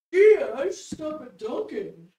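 loud, drawn-out, mocking voice. Mimicking how the other speaker keeps talking about stopping: imitating the other speaker's voice. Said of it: "Is that what I sound like?".

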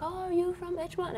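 fake French accent. Retelling what a girl on the bus asked her, bad French accent. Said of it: "in her French accent".

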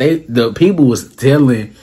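ordinary talk, nothing marked

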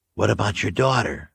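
ordinary delivery, nothing marked

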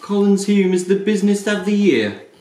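put-on high, loud, belted Australian accent. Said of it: "Read that in your best, uh, Australian accent".

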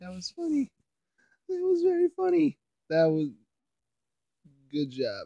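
laughing uncontrollably. Reacting to a funny video just watched, laughing uncontrollably. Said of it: "I can't stop laughing over that".

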